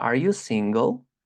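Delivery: rising tone at the end of single. Teacher explaining english question intonation: rising intonation at the end. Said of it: "pronunciamos una entonación ascendente".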